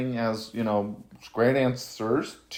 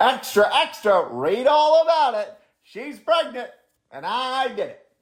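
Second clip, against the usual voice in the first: very high, sing-song, swooping newsboy call; 12 semitones higher, 3 dB louder than usual. Announcing the news after being asked to say it like a news program: mock news announcement. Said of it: "say it like an, uh, news program".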